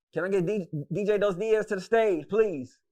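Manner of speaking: loud, high, big DJ announcer call. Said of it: "all I hear is [name] voice".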